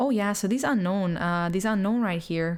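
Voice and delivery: accent from Canada. Trying out a good Canadian sentence for fun, in a Canadian accent. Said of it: "Canadian accent".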